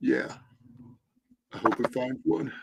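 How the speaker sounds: breathy, whispered voice. Acting out a made-up movie teaser line: Nicolas Cage impression. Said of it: "And then Nicolas Cage is like".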